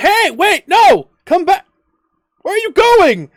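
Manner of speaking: frantic shouting, very high-pitched and loud.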